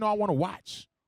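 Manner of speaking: ordinary talk, nothing marked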